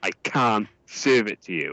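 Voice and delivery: mock anger, slow and angry. Retelling a refusal at a shop counter: imitating an angry clerk. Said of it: "the guy gets really angry".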